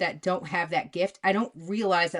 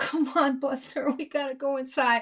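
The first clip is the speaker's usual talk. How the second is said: pleading, begging, coaxing tone; 7 semitones higher than usual. Retelling a dog owner trying to get her dog inside: imitating a pleading dog owner. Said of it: "pleading with a giant doodle".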